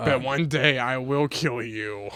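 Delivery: playful, mock-sinister, menacing villain voice. Reenacting a movie scene with a friend, acting as the Joker. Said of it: "you want me to be Batman or Joker?".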